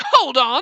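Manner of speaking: sudden, high, loud shouting. Reading a game character's objection aloud: shouting. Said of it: "I shout everything".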